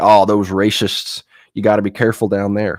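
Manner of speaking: mock, put-on Western accent. Mocking what city people say about Southern states, Western accent. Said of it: "why am I doing the Western accents?".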